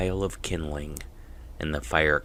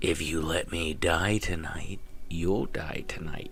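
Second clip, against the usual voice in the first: crackling, lilting, raspy sing-song fire voice; 5 dB quieter than usual. Narrator leaning toward the campfire gives its words: raspy sing-song fire voice. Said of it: "The popping and sizzling of the fire is really beginning to sound like words. / albeit in the raspy sing-song voice of a fire consuming wet branches, because we all know that sound. Yet even as the wo".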